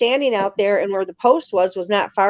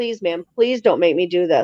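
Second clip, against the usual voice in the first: mock terrified pleading tone, lower; 2 semitones lower than usual. Retelling what a man begged of her, imitating a terrified plea. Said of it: "You're really terrified".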